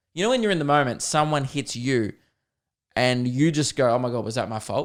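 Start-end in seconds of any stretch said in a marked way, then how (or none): none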